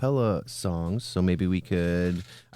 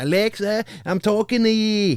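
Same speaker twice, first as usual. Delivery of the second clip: drawn-out, slow, very high put-on Scottish child voice; 14 semitones higher, 6 dB louder than usual. Retelling kids whose accent alexa cannot understand: imitating scottish kids' accent. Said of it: "Alexa not listening to Scottish people".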